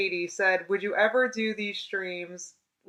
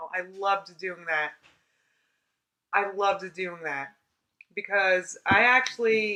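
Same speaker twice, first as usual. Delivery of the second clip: slow delivery, becoming emotional mid-sentence. Vlogger speaking to viewers about their old daily videos, getting emotional. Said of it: "I'm getting emotional".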